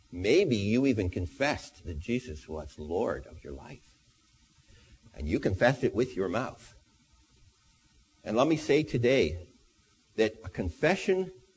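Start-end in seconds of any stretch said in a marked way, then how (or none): 0.1-6.7 gentle, tender, low, yet direct and pointed. Speaker addresses his listeners directly, tender but pointed. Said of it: "I say this very, very tenderly, but very, very pointedly".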